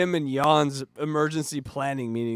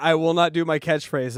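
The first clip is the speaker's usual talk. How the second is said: usual speaking voice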